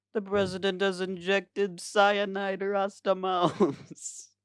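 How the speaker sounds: high-pitched cartoon character voice. Making up a line in the style of the show: imitating a Rasta Mouse character. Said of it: "it's just something like".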